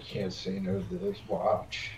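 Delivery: slow, soft mutter under the breath. Saying a line under the breath. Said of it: "under my breath".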